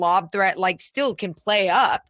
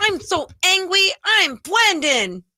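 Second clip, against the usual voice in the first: put-on very high, slow, drawn-out little-kid voice; 11 semitones higher than usual. Joking about how someone would sound if upset: Brendan as a little kid. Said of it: "What if he talked like that?".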